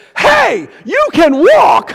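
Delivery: booming, very high, drawn-out, swooping shout. Retelling a grandson's remark at the plane door: imitating a grandson shouting. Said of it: "my grandson shouts for everybody to hear".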